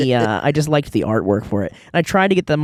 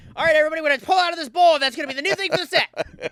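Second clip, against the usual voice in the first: put-on big carrying call, very loud, very high; 13 semitones higher than usual. Act out Mark Rosewater addressing everybody at work, in Mark Rosewater's really loud voice. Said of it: "his really loud voice goes".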